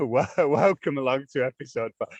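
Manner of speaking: speaking while giggling through the words. Opening an episode, unable to keep a straight face: laughing while talking. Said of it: "I can't keep a straight face".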